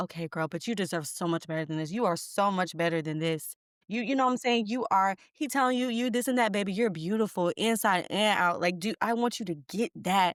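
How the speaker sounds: ordinary delivery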